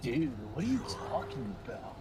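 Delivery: put-on, whiny, brooding, misunderstood edgelord voice. Repeat the question a kid was quoted asking, now in an edgelord voice. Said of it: "It sounds like an edgelord now".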